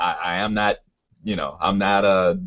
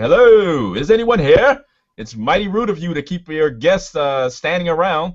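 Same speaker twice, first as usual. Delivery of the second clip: raised, pitched-up voice calling out; 9 semitones higher, 4 dB louder than usual. Calling out to whoever summoned them here, raised voice. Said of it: "I kind of raise my voice".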